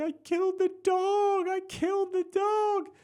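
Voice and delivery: very high, loud, tearful sobbing wail. Retelling the wife's reaction about the dog, imitating her crying. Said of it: "my wife just starts crying even more".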